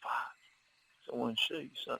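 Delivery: whispered under the breath, hushed and breathy. Retelling what a woman whispered to the speaker when she came back, whispering. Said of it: "she kind of whispered to me".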